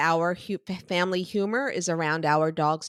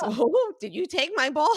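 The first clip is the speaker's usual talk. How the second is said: very high, dopey, empty-headed cartoon dog voice; 9 semitones higher than usual. Retelling a running household joke, voicing Jimmy. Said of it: "So it's always".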